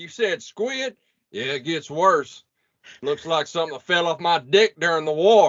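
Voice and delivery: put-on rural country accent, high-pitched. Quoting lines from a scene, done in a country accent. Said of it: "I'm gonna just do this in country accent".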